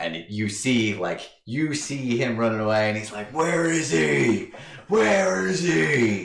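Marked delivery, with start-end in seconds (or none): 3.3-6.2 put-on bellow, much higher and slower. Describing a scene where a figure runs away shouting, retelling a bellow. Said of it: "he's just like bellowing".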